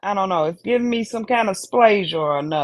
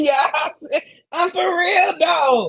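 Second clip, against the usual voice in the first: talking through laughter, pitched up; 8 semitones higher than usual. Insisting to the others that the remark is meant seriously: laughing while talking. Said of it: "I'm laughing".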